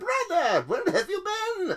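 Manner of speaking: very high, loud cartoon skeleton villain voice. Player voicing a miniature figure greeting its brother; Skeletor-like voice. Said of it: "almost Skeletor like voices".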